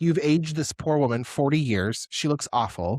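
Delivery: plain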